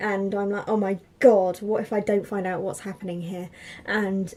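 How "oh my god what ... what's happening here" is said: plain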